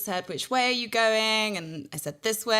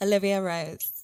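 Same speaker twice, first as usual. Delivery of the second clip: mock seductive, put-on sexy voice. Saying a name when asked for it: put-on sexy voice. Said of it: "Give me your names in the most sexy voice".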